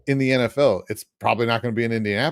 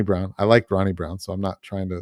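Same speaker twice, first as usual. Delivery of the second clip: plain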